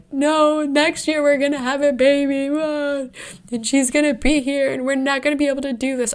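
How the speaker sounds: mock full-on sobbing, voice very high. Wife retelling answering her husband at Christmas, retelling own sobbing. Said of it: "I just like full on like am sobbing".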